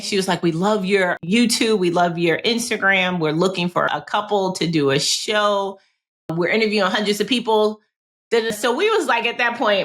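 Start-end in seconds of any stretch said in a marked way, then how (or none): none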